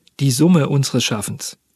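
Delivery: ordinary talk, nothing marked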